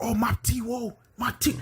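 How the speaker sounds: high-pitched, stretched-out delivery. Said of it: "the dudes with the voice of".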